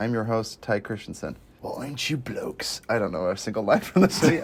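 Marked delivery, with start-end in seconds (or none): 1.6-2.8 put-on whispered, hushed, breathy British tough-guy accent. A movie podcast host opens the show with his best Jason Statham impression. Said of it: "I'm just doing my best Jason Statham impression".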